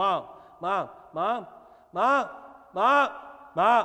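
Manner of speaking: put-on loud, drawn-out, repeated little child voice. A parent describes the fourth child interrupting conversations, imitating Skylar calling mom. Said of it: "Skylar come out".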